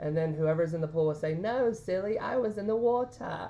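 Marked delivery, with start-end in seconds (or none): 1.3-3.5 high-pitched, slight British accent. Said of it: "in a little British accent".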